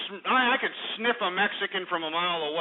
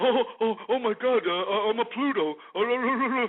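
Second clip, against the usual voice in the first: frightened, stumbling, stammering, panicked voice; 3 semitones higher than usual. Mocking a caller on air by imitating him: mock scared voice. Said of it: "now you're scared. Now you're like".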